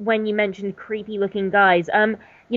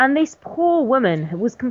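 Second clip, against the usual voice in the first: plain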